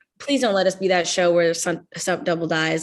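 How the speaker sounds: put-on nervous, anxious, breath-held, hopeful pleading. Retelling holding breath during a stunt: imitating own anxious plea. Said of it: "holding my breath".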